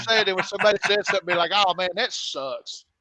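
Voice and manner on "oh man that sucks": put-on American accent. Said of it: "stick to the American catchphrases".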